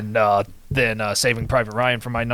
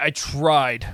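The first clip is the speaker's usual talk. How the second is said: heavy emphasis on "tried"; 3 semitones higher than usual. Talking about making a diverse list of movies, emphasis on tried. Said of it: "emphasis on the word try".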